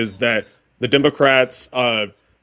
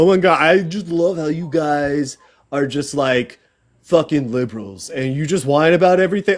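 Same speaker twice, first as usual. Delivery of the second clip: play-acted, scornful, sarcastic mocking tone; 3 semitones higher than usual. Arguing with the other speaker, mocking what they always say: mocking the opponent's mantra. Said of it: "go on to your mantra about".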